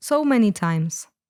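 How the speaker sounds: plain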